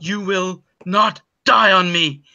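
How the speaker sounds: slow, frantic, almost shouted delivery. Voicing a doctor with a dying patient: near shout. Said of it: "he almost shouts".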